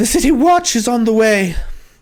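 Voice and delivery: loud, high-pitched shout. Voicing a woman with a rapier who shouts a warning: shouting. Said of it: "and she shouts".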